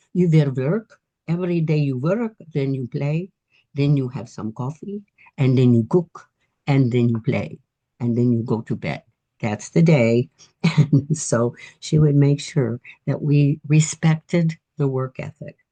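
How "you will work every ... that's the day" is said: put-on Hungarian accent throughout. Retelling her grandma's daily rules for the kids, in a Hungarian accent. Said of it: "in her Hungarian accent".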